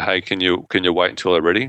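plain

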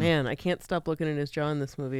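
plain

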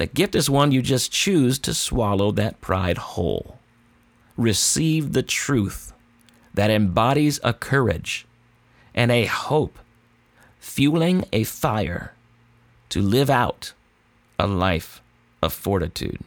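very slow, drawn-out, deliberate, word-by-word delivery. Speaker repeats a saying slowly so listeners can write it down. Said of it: "I'll say it again slow".

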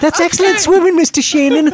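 very high, loud, squeaky little hobbit voice. Praising someone's swimming: Samwise impression. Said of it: "I get to do my Samwise impression".

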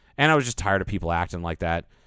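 ordinary delivery

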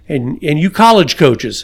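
ordinary talk, nothing marked

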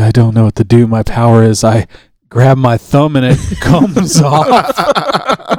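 very slow, drawn-out, extremely sad, miserable voice. Acting out a mutant with a weak power: imitating an extremely sad boy. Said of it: "extremely sad boy".

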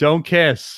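mock loud, sudden yell. Retelling what an audience member yelled during a movie: imitating someone yelling. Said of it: "just started yelling, like".

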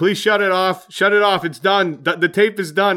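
put-on, urgent, loud screaming. Retelling the team's pregame music mishap in the gym: retelling own screaming. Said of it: "I'm screaming".

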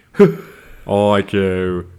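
fake, slight, silly British accent on "IQ" and "Q". Mocking how a woman says the letter Q, speaker does a stupid little British affect. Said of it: "add this stupid little British affect".

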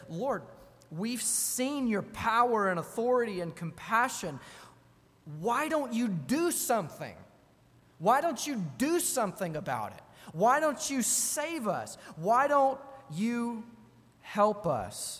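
high-pitched, reproachful, pointed, accusing tone. Acting out the disciples waking Jesus in the boat, the speaker uses an accusatory tone. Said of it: "Comes across as kind of accusatory".

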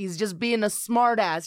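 usual speaking voice

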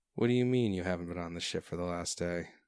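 doubtful, distrustful, suspicious, wary tone. Voicing a sailor who leans away from the captain: suspicious. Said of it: "His, his eyes kinda narrow".

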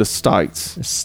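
whispered Australian accent, "States" with an ai vowel. Showing how Australians say a word: Australian accent. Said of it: "There's an I in there".

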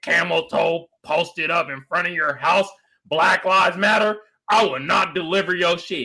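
reading in a cartoon dog mascot voice. Reading a post aloud: sounding like McGruff the Crime Dog. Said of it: "You sounded like McGruff the Crime Dog when you read that shit".

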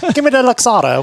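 sudden British accent. Joking about ordering at a bar, the speaker orders in a sudden British accent. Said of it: "turned British all of a sudden".

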